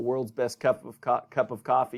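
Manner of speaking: ordinary delivery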